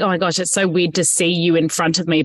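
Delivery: plain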